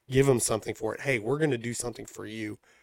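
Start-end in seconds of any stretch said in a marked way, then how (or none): 1.0-2.5 put-on sarcasm, much quieter. Acting out the network's offer to viewers, imitating someone sounding sarcastic. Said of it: "Obviously sounding sarcastic".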